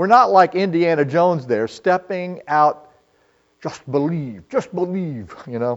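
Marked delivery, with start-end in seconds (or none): 3.6-5.3 soft, put-on Scottish accent. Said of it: "Scottish impression there".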